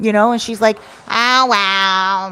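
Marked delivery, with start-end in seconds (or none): 1.1-2.3 put-on smoker's voice with drawn-out wow. Retelling a woman's reply after being confronted about a secret, in a put-on smoker voice. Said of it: "In the smoker voice".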